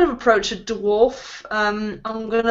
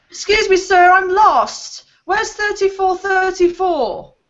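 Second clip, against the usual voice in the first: put-on high-pitched child dwarf voice, much higher; 9 semitones higher, 5 dB louder than usual. Pretending to be a child dwarf addressing a man, high-pitched child dwarf voice. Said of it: "put a bit of a high pitched voice on and pretend to be a, a child dwarf".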